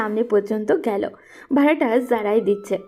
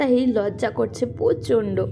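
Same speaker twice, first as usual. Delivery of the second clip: ordinary delivery, nothing marked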